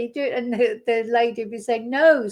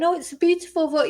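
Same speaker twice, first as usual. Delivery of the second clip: put-on politician voice, laying on heavy flattery; 6 semitones higher than usual. Mocking a reply to an Afghan journalist: Donald Trump impression. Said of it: "Donald Trump thinking he can get through it by saying".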